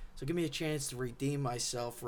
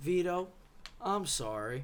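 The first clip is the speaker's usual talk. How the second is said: grudging, forced, insincere, pitched-up tone; 5 semitones higher than usual. Speaker apologizes to Vito, doing a mock-grudging apology like Kevin's brother. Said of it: "I tried to say that with the same voice inflection that uh, Kevin's brother said".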